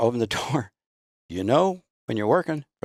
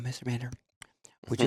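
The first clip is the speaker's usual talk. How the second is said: mock cute little-girl voice, quieter, faster; 8 dB quieter than usual. Retelling a phone call from a little girl, imitating her cute voice asking for help. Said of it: "just the cutest voice ever".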